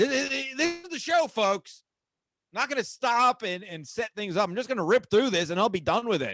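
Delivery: shouty, yelling-style, punched and pushed-out delivery. Launching into rules for retail without setting things up: yelling. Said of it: "I don't know why I'm yelling".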